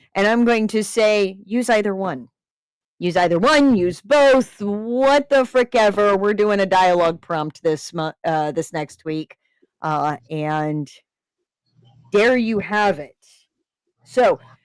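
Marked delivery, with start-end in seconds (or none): none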